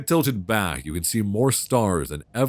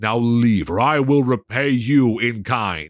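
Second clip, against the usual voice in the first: loud, thunderous, rolling-thunder god voice; 3 semitones higher, 5 dB louder than usual. Voicing a god who refuses aid to a murderer, god's voice like rolling thunder. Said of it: "His voice rises from a gentle whisper to a rolling thunder".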